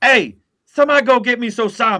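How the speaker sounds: put-on drill-sergeant shout. Picturing a first sergeant shouting for a Marine: imitating a first sergeant yelling. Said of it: "the first sergeant in my head right now yelling".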